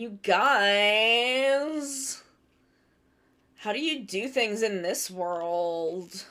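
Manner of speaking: hushed voice with "guys" stretched out. Reprising a character voice from a Sonic game for the group: Blaze the Cat voice. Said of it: "my my Blaze the Cat voice".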